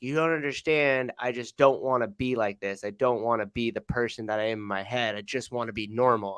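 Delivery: ordinary talk, nothing marked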